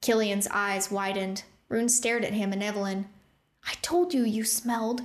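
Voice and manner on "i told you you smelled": sharp, hissing words. Rune, with goblins staring, hissing at Killian and Evelyn. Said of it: "Rune hissed".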